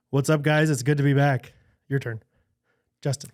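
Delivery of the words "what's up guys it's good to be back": mock gloomy, depressed-sounding voice. Doing an impression of Justin for the podcast: imitating Justin. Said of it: "I'm gonna do it one more time".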